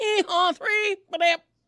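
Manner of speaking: very high-pitched ballpark umpire call voice. Showing the family phrase as an umpire making a call: imitating an umpire making a call. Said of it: "umpire making a call".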